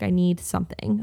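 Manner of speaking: plain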